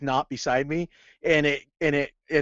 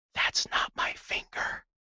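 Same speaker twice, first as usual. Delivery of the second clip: whispered, much quieter. Retelling poking him in the side and whispering toward his head: whispering. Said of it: "whisper into the area that his head was, whisper".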